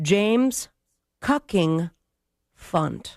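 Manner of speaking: deliberate, slow, careful, measured delivery. Announcing a name option that must be said slowly: slow, careful delivery of name. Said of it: "I must say it slowly".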